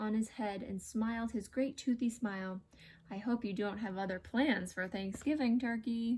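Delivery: plain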